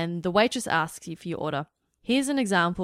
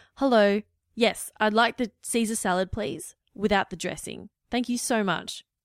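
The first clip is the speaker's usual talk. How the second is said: authoritative, firm, confident, strong start and finish; 3 semitones higher than usual. Example order for a salad, said with a firm start and firm ending. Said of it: "a strong, firm beginning to when you speak and also a firm ending".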